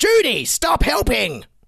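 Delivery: high, loud mock shout. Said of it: "Justin Trudeau shouting".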